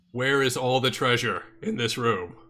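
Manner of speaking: loud yelling. A player's character calls out a question to the martial artists, yelling out. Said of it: "I'm gonna yell out to the uh".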